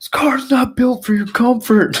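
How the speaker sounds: mock screaming. Retelling how the cops answered a request for air conditioning: imitating cops screaming. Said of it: "screaming at me".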